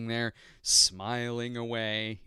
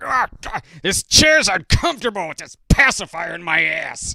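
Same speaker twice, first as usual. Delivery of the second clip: put-on very loud, shrill, swooping, bitter old-man baby voice; 7 semitones higher, 12 dB louder than usual. Voicing what a baby might say, angry bitter baby voice. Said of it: "my voice for him is something like".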